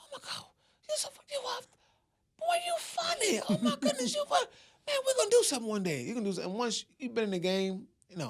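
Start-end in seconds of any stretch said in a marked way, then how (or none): 0.0-6.5 put-on very high, swooping, excited gushing. Retelling what a woman said after the show: imitating her excited praise. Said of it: "she was like".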